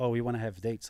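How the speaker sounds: ordinary delivery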